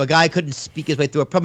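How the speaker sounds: ordinary delivery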